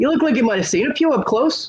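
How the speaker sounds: put-on Irish accent. Retelling a line said during an argument: Irish accent. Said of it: "I did say it with the Irish accent".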